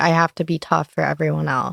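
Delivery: ordinary talk, nothing marked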